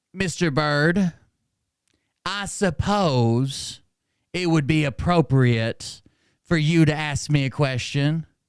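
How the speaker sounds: very slow, measured, deliberate, odd-sounding delivery. Retelling what a teacher said: imitating his slow, weird talk. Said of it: "he talked real slow".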